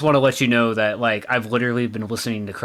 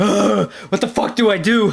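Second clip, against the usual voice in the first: high, loud, panicked cry. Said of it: "so I'm like".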